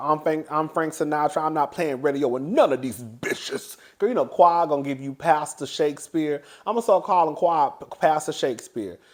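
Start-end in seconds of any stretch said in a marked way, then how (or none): 0.0-3.7 acted-out ranting outburst, going off in full. Retelling a scene where Qua goes off in the back: imitating Qua going off. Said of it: "She start going off".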